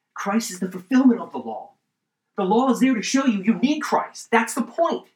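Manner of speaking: high, loud, fervent excitement building up. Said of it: "Sorry, I'm getting excited".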